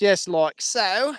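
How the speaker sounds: natural Australian accent coming through. Hooking up a fence on the farm, slipping into an Australian accent. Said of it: "There's my Australian accent coming out again".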